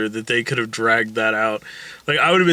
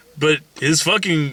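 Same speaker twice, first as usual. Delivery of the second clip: ordinary talk, nothing marked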